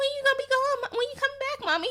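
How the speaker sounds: put-on very high, sweet little child's voice. Retelling what the kid asked his mother: imitating a sweet kid. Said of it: "He's all sweet".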